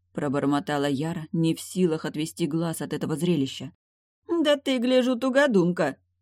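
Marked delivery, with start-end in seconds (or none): 4.3-6.0 high, scoffing, snorting jibe. Narrator reads Rosie answering Yara, with a snort. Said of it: "фыркнула Рози".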